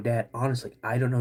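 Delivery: ordinary talk, nothing marked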